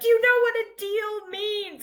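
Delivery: put-on very high, shrill scream. Retelling how a contestant screamed at another during a deal: imitating someone screaming.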